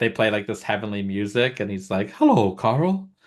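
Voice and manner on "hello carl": high, drawn-out, long announcer-style call. Retelling a podcast bit where an announcer greets the hosts: Howard Finkel voice. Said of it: "the Howard Finkel voice".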